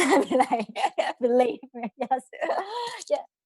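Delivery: talking while laughing through the words.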